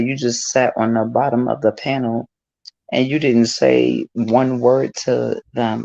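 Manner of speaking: plain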